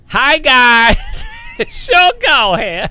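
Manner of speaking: high, swooping, slow put-on voice, guys stretched out. Showing which voices they can do, Sean Cole impression. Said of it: "I can do Sean Cole".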